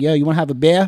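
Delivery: put-on Boston accent. The speaker imitates somebody offering him a beer; Boston accent. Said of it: "There's nothing worse than a Boston accent".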